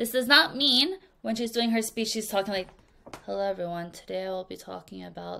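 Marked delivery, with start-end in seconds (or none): 3.2-5.4 very quiet, flat, emotionless monotone. Showing the group how a speech should not sound: flat, no emotion. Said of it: "That is no emotion".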